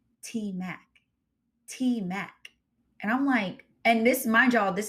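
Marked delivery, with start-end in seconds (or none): 0.2-2.3 half-whispered, hushed, stretched out very slowly. Retelling how a stranger in a food line spoke: imitating someone half-whispering. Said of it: "whispering it".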